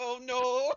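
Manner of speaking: very loud, high, panicked and terrified cry. Voicing a character whose bones shake at the sight of trolls: terrified character cry. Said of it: "his bones start to shake".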